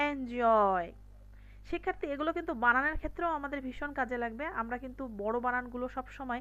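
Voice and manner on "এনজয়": enjoy with stress on the joy syllable. English pronunciation lesson, stress on joy in enjoy. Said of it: "এনটাকে আস্তে করে বলবো কিন্তু ... স্ট্রেসটা কোথায় দেব? জয়ে।".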